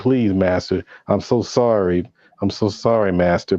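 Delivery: imitated groveling, begging tone. Retelling a scene where the master came around mad: imitating a groveling plea.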